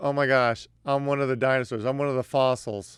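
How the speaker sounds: ordinary talk, nothing marked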